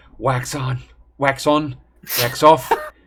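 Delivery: stage whisper with voice. Describing what their character does while swinging a chain, whispering.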